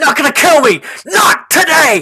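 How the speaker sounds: shrill, very high, very loud panicked yell. Voicing a fleeing character as he turns and runs: fleeing character yelling. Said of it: "You can hear him yell".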